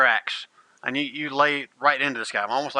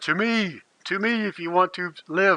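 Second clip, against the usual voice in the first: high, ringing, rallying battle cry. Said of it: "he yells out to everybody".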